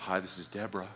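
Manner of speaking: dropped a whole octave, deep and very quiet. Imitating a former vice president answering the phone: Deborah dropping her voice an octave. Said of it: "She dropped her voice a whole octave".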